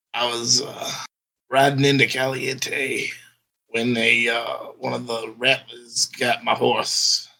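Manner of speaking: hoarse, raspy, rough voice. Narrating to players, voicing a rider whose horse a rattler got; raspy voice. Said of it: "he looks up with a raspy voice".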